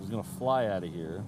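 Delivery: normal talking voice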